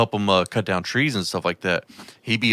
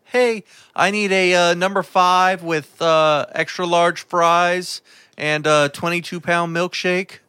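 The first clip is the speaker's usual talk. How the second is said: voice raised slightly higher in pitch; 9 semitones higher, 3 dB louder than usual. Ordering food at a drive-thru, in a slightly higher voice. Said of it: "I might kind of try to raise it up a little bit".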